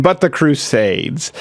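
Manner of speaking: ordinary talk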